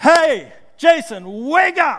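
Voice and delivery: preacher cry, very loud and very slow, booming. Retelling waking a sleeping friend mid-sermon, the speaker uses a loud Pentecostal-type voice. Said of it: "in a real loud Pentecostal-type voice".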